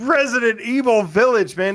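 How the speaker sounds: high-pitched mock screaming.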